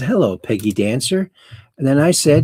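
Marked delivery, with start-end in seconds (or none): none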